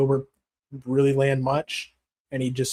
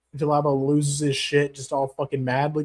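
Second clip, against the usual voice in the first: normal talking voice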